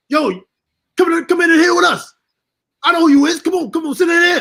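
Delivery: acted hollering shout. Retelling X inviting him into the VIP: imitating X yelling. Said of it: "He started yelling".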